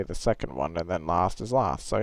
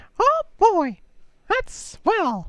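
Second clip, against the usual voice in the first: very high, squeaky, drawn-out mouse voice; 3 dB louder than usual. Asked about a Mickey voice, doing a quick Mickey impression. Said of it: "I can do a Mickey voice".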